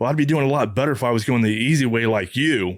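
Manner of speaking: plain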